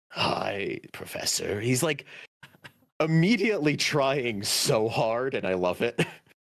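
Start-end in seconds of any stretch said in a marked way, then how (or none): 0.1-1.6 very low, rough gravelly voice. Retelling a character's first words to the Professor, in a gravelly voice. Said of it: "with this gravelly voice".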